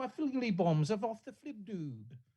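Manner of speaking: put-on high, unhinged, crazy-lady British accent. Mocking an obligatory crazy-lady character, the speaker does her crazy lady british accent. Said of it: "in a British accent and occasionally says".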